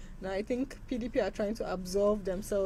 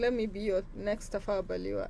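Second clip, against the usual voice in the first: normal talking voice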